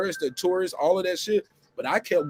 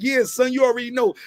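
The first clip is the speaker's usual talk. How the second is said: put-on best-effort Brooklyn accent, pitched up; 7 semitones higher, 5 dB louder than usual. Retelling playing along when people assumed the speaker was from new york, put-on brooklyn accent. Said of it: "my best Brooklyn accent".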